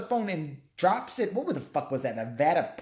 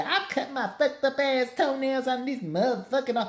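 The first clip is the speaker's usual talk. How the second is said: pitched-up cartoon kid character voice; 7 semitones higher than usual. Imitating the kid from the movie: South Park character voice. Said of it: "is like a South Park character. It's like talking like".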